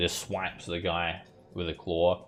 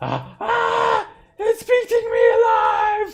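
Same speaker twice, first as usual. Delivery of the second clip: very high, very loud shriek of terror; 12 dB louder than usual. Voicing a crewman seized by a zombie gorilla: NPC screaming in terror. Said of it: "He screams".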